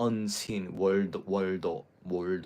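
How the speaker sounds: slow Japanese-accented English on world. Showing another way the words could have been said: Japanese accent. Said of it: "with a Japanese accent".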